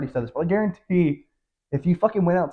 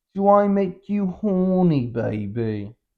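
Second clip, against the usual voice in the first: hammed-up, overacted delivery with baby stretched out; 4 semitones higher than usual. Trying the quote impression again after a weak first try: really bad Austin Powers impression. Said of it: "That's really bad".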